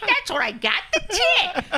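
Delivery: put-on high, loud, cigar-chomping baby voice.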